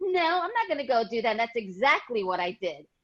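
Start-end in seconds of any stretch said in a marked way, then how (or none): 0.0-1.3 sassy, defiant, pitched-up delivery. Retelling an answer given to a guidance counselor: retelling own reply with attitude. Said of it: "And I had an attitude".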